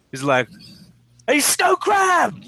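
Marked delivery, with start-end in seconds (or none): 1.2-2.3 very high shout, sounding as if from far off. Someone calls to you from the other end of the lot, shouting across a lot. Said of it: "Shouting at you from the other end".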